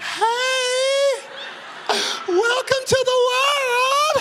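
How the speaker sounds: very high, very slow, teary-sounding, drawn-out, cheery gushing. Imitating parents greeting a crying newborn: imitating smiling parents. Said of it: "we got the nerve to be smiling".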